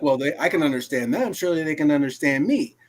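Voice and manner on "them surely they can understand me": ordinary talk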